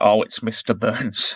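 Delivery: condescending, patronising, reassuring all-is-well tone. Quoting a cartoon character's line about Mister Burns: patronising Willie voice. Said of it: "the way he says it is so patronising".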